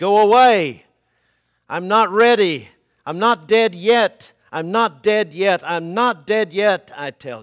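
terror-stricken, shrill shriek at full volume. Narrator reads a man's words as he sees someone entering the room, screeching with terror. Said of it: "he screeched with terror".

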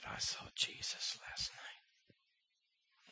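very slow, soft, dying man's whisper.

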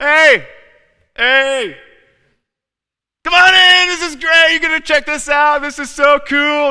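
obnoxious, belligerent, very high, loud shouting. Acting out Woman Folly at the doorstep calling to passersby, shouting belligerently. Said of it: "belligerent and obnoxious and shouting at people".

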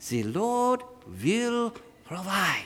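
soft put-on Swiss accent. Repeating a friend's mother's favorite phrase the way he says it, in a Swiss accent. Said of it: "say in his mother's Swiss accent".

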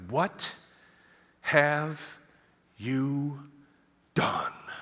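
dead slow, every word spaced apart with pauses. Retelling how she reacted to a decimated room, pausing between every word. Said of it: "she pauses between every word like that".

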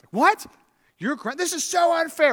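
play-acted outraged teenager voice, very high pitched. Acting out a grounded child's reaction, imitating an angry teenager. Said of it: "Anger, stage one".

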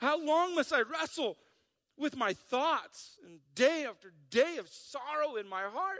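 whining, complaining voice, high. Reading a psalm passage aloud: whiny voice. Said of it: "I got to read this with a whiny voice".

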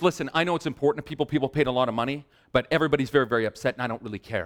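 plain

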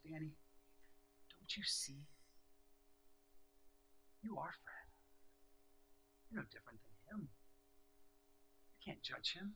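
hushed, tender, soft, gentle whisper. Telling a personal story, retelling what an inner voice whispered to him. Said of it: "The Holy Spirit whispers".

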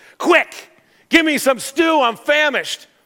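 put-on impatient, demanding spoiled kid voice. Reading from the text a character's line to his twin brother, petulant child voice. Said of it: "Sounds like a petulant child".

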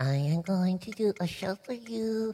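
ventriloquist style, mouth not moving. A child practicing ventriloquism puts on a show for Mom: ventriloquist voice, lips still. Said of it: "Now don't move your mouth".

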